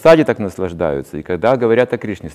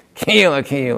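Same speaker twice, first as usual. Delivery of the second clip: nasty, unpleasant, taunting voice, pitched up; 5 semitones higher than usual. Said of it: "Как будто он кого-то передразнивает".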